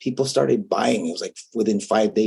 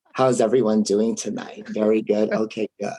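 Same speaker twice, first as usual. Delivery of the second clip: put-on valley girl voice, full register. Showing how you would greet a crowd that needs it, in a valley girl voice. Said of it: "I sound like a valley girl".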